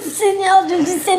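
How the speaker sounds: words broken by nervous laughter. Reacting to a story about a sister who ran away: nervous laughter. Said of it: "Je rigole. Mais c'est nerveux".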